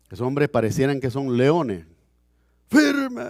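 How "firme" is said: very high, barked, drill-ground style shout. Showing how a military officer gives an order: military command shout. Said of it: "Y se oye la voz hasta allá".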